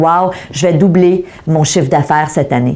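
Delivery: normal talking voice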